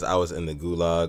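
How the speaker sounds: plain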